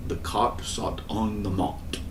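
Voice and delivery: put-on British accent. Speaker demonstrating how the british say this vowel, british accent. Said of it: "like the British do".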